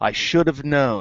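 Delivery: low, hushed, cryptic, mysterious tone. Giving an example of how a book character reacts to discoveries, Moiraine impression. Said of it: "This is my impression of Moiraine".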